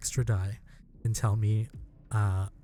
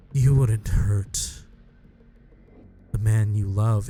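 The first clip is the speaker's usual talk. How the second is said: demon voice mimicking another voice, louder; 7 dB louder than usual. Voicing a demon who mocks the player with a stolen voice: demon sounding like Francis. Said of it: "you start to hear him sound like Francis".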